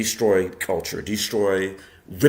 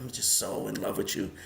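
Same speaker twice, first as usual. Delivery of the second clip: play-acted breathy, whispered, flirtatious sweet voice; 11 dB quieter than usual. Retelling a cartoon poison frog's line to the bad guy: imitating a flirtatious voice. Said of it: "she's so flirtatious with the bad guy".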